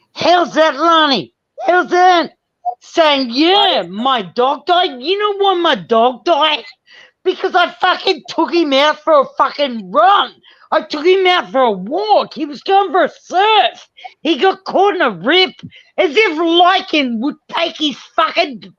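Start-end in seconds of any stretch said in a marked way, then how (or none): 3.3-18.6 heated, angry speech in an Australian accent. Speaker ranting, then telling Lani to settle them down, doing the Australian thing. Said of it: "I'm doing the Australian thing".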